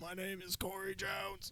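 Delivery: imitated trach voice, very quiet and high. Speaker shows how Corey Jones sounds, like the smoking ad lady: Corey Jones's trach-like voice. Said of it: "he had to talk like this".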